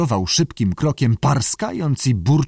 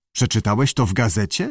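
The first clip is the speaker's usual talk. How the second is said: plain reading voice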